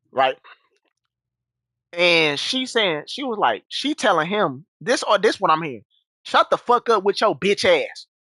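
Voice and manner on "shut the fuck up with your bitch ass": rough, harsh cussing-out tone. Retelling an argument overheard at home: imitating someone cussing him out. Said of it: "Talking to him like that".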